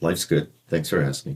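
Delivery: low, flat, deadpan, lifeless monotone. Describing someone's flat energy when asked how they are, imitating a flat monotone.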